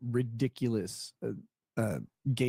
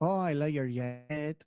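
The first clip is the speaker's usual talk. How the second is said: put-on lilting Colombian-accented English; 4 semitones higher than usual. Speaker retells what Anna said to him, imitating Anna's Colombian accent. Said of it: "you could tell like her accent".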